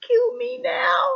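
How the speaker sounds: tiny, very high, squeaky voice. Joking about having daily breakdowns: tiny squeaky voice. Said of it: "Tiny squeaky voice".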